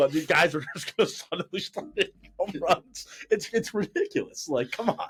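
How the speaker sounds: words breaking up with laughter. Mocking the idea that new bats bring home runs, laughing while talking. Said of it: "I can't even say it without laughing".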